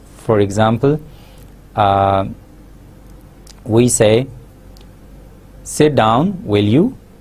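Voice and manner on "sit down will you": pitch rises at the end on "will you". Checking information to confirm, sit down, will you: rising tone on will you. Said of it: "will be said with the rising tone".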